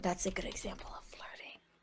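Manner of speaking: speaking quietly in a whisper. Speaking in character into April's ear at a table: whispering. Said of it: "and I whisper to, in April's ear".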